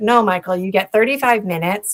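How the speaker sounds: usual speaking voice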